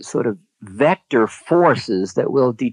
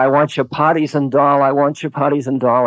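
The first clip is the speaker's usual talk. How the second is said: put-on stubborn, repeated, insistent half-shout, mild; 2 semitones higher than usual. Retelling a guru demanding food in the night: imitating someone screaming. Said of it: "he started screaming".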